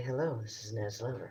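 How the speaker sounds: gentle, soothing, put-on nurse bedside-manner voice. Retelling how his mother, a nurse, nicknamed people: imitating mother's voice. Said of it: "talking in this voice ... that's my mother's voice".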